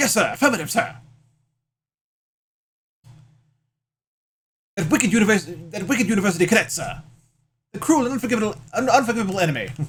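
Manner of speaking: rapid delivery. Voicing a sergeant witness answering in court, talking fast. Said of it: "I'm talking fast".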